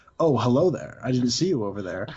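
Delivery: gangster-style, mobster-sounding delivery. Retelling how a movie opens with the ghost of John Gotti: imitating John Gotti. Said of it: "the ghost of John Gotti turns to look at the camera like".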